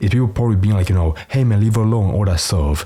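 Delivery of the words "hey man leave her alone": usual speaking voice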